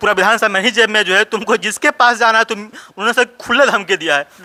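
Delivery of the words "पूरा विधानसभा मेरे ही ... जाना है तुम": normal talking voice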